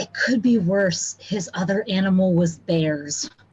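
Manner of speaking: voiced stage whisper, as an aside. Half-whispering back to a nervous party member in character: half-whisper. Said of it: "I'm gonna whisper back".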